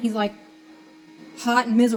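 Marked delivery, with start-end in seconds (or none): 1.4-2.0 mean, grumpy, grumbling tone. Retelling how Dad answered a child's greeting after a bad workday, imitating Dad's mean tone. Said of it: "in a really like mean tone of voice".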